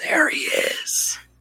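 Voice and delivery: breathy stage whisper, meant private yet carrying. Hammer pointing at Songbird and telling the others, in an accidental stage whisper. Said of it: "in like a whisper that isn't supposed to be a stage whisper".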